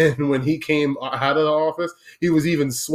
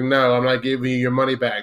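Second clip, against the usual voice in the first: put-on smug tone. Retelling a worker who refuses a yelling customer a refund: imitating a smug refusal. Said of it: "he was just looking smug as a bug in a rug".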